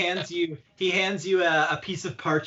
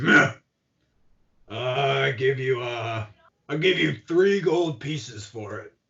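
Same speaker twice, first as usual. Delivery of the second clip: put-on grunting orc character voice; 4 semitones lower than usual. Voicing an orc blacksmith offering three gold for a mace; grunting orc voice. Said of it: "he sort of looks at it and he grunts".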